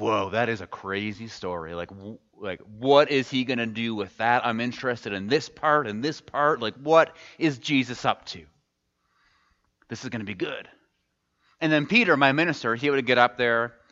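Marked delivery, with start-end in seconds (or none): none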